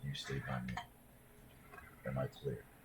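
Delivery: very quiet half-whisper, very close up. A character pulls the player's character close by the waist and speaks, in a half-whisper. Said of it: "he whispers in your ear".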